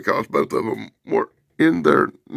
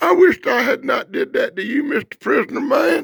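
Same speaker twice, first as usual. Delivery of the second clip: high-pitched, weepy crying voice, blubbering through tears; 8 semitones higher than usual. Retelling a comic character's line from the floor, imitating a character crying. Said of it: "wound up on the floor crying and going".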